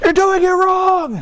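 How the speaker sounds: very high, shrill yelling. A coach describing parents shouting at their kids, retelling parents yelling. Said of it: "mom and dad are over there yelling".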